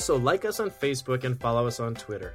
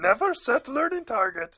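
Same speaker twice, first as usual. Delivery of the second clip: put-on wise old alien voice; 12 semitones higher, 4 dB louder than usual. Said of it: "Good Yoda voice".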